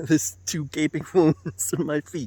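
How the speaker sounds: talking through laughter. Recounting a painful injury to the feet, laughing while talking. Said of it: "I don't know why I'm laughing so much".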